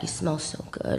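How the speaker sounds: soft, close, sultry murmur.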